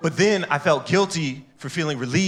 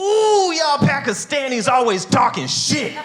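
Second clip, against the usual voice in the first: mock very high-pitched, angry, mad blurt; 11 semitones higher, 4 dB louder than usual. Retelling his reply to a heckling woman at a show: imitating himself being mad. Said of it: "I was so mad".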